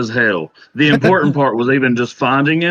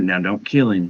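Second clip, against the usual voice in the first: hushed half-whisper, very close to the ear; 6 semitones lower, 4 dB quieter than usual. Voicing a character who leans in to a player: half-whispering in someone's ear. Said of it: "Dolly whispers in your ear".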